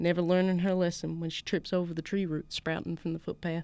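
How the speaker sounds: plain reading voice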